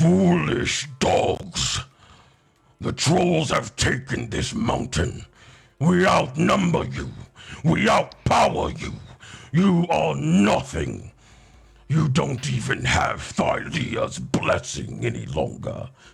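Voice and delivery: rough, guttural, stony troll voice. Game master voicing a troll answering a challenge, in a guttural, stony voice. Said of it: "sort of guttural, stony almost".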